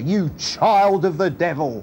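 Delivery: mock, thundering, roaring preacher voice. Retelling a father scolding his little girl late for breakfast, retelling a roar in preaching voice. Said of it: "he roared in his best preaching voice".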